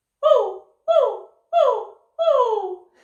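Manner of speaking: shrill, loud, slow, very high, drawn-out puppy whimper. Voice exercise, slightly higher in the voice: puppy dog whimper on 'oh'. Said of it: "slightly higher in the voice now, and we're going to call it the uh, puppy dog whimper".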